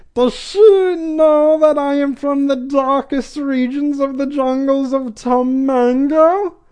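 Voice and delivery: very high voice with know drawn out. Recapping a scene, quoting what Dolores says: Dolores voice. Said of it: "finally a voice I can kind of do".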